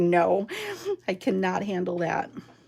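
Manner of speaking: plain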